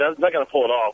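ordinary talk

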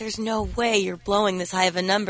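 ordinary talk

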